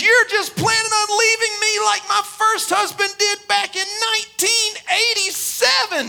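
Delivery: mock crying, tearful, high-pitched wailing outburst. Retelling a counseling session in which the wife cries and gets louder: imitating a woman crying loudly. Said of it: "she starts crying and getting louder and louder".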